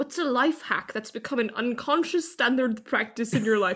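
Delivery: terrible put-on Scottish accent. Quoting the opening of a TikTok to the group, bad Scottish accent. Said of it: "With like the Scottish accent".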